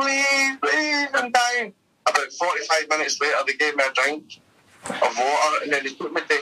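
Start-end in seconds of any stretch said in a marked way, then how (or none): 0.0-1.7 put-on, very high, fake crying and sobbing. Speaker recounts being held in a van, acting out their own words: fake crying. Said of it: "putting on a fake cry".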